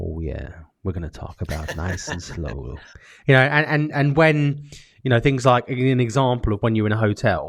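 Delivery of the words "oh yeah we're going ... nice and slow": very low, soft late-night radio DJ voice. Describing sections of someone's performance, the speaker slips into a late-night DJ voice. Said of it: "like the late night D J voice".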